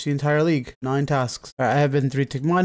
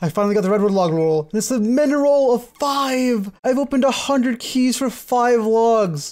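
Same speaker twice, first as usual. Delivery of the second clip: exasperated, fed-up, frustrated, tilted and pitched up; 8 semitones higher than usual. Gamer opening keys for rare logs after bad luck, tilted and frustrated. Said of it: "I'm sorry if I sound so tilted".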